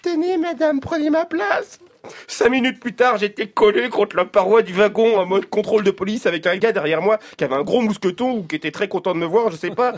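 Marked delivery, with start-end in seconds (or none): 0.0-1.8 very high, tiny, meek, well-mannered little voice. Speaker retells standing up to offer his seat on the RER, in a put-on small polite voice. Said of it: "d'une petite voix de métrosexuel judéo-chrétien, bien élevé".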